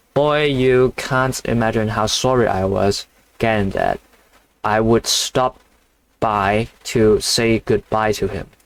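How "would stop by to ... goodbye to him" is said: ordinary delivery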